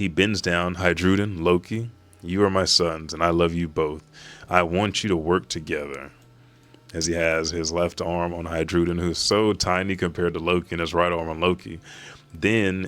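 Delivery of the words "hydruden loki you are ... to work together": ordinary delivery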